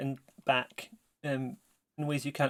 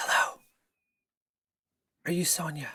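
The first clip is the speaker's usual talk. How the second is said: close, intimate stage whisper at the ear; 2 semitones higher than usual. Narrating a scene, a voice addresses the listener's character in their ear: close whisper. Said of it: "a voice whispers in your ear, very close".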